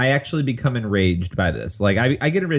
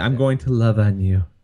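mock creepy preacher voice, lower pitch; 3 semitones lower than usual. Imitating a creepy nineteen-eighties lay minister: imitating a creepy evangelical lay minister. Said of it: "lay minister in the nineteen eighties".

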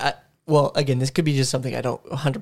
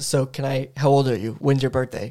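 ordinary talk, nothing marked

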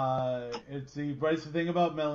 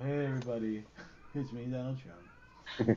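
soft, breathy, half-whispered, slack-jawed and worn out; 3 semitones lower, 5 dB quieter than usual. Showing how to do an impression step by step: Donald Trump impression. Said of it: "teaching how to do an impression".

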